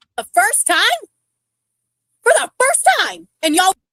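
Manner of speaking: outright yelling, loud and high. Talking with others in a group, yelling. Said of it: "Why are you yelling?".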